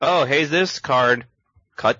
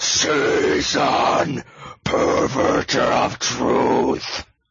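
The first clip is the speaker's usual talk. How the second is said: metal-style death growl. Speaker readies a stage voice to announce a title, death metal growl. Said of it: "I think it does deserve a Death Growl".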